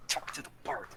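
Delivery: whisper through gritted teeth. A player's character turns to another character, whispered through gritted teeth. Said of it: "I'll whisper through gritted teeth".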